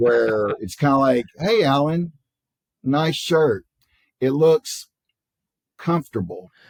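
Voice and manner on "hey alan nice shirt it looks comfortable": sweetly passive-aggressive, throwing shade nicely. Giving an example of Midwest nice to a listener, throwing shade in a nice way. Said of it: "throwing shade in a nice way".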